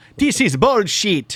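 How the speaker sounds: loud put-on British accent. Retrying the line in a british voice: second try at british accent. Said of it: "That's not British at all".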